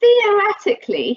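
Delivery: theoretically heavily stressed, leaned on word by word. Explaining legal risks to listeners, stressing the word 'theoretically'. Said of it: "I'm stressing the word theoretically".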